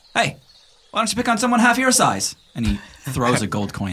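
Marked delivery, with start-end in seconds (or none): 0.1-2.3 very high, loud shouted yell. Voicing a person in a scene who yells up at another character: yelling up at someone. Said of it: "yell up at you".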